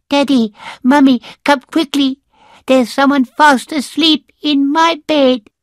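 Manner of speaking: very high, squeaky little bear cub voice. Reading a story aloud, voicing Baby Bear calling his parents: squeaky Baby Bear voice. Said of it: "a squeak from Baby Bear".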